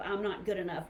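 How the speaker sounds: ordinary talk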